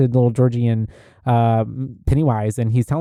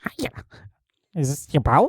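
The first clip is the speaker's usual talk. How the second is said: happy-go-lucky, friendly voice that sounds terrifying; 3 semitones higher, 4 dB quieter than usual. Quoting the clown greeting Georgie from the movie: Pennywise voice. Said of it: "happy-go-lucky, terrifying fucking Penny-".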